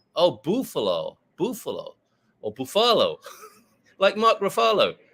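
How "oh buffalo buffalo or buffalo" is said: put-on "buffalo" in Mexican accent, swooping and slow. Imitating how a friend says a word: imitating mexican friend's accent. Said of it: "the way my Mexican friend says".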